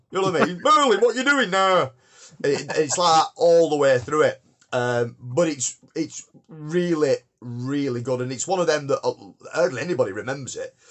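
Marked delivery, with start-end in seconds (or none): 0.6-1.9 northern character voice, much higher. Recalling a show, quoting how Gingerth always talks: Gingerth's very northern accent. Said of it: "it's very northern, and it's like, Gingerth talks like that".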